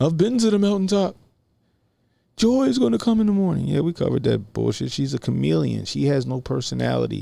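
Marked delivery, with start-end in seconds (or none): 0.0-3.7 very high, shaky, quavering voice. Mocking someone in an interview: mocking shaky Martin Luther King voice. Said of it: "trying to sound like Martin Luther King with the fucking, the fucking shaky voice".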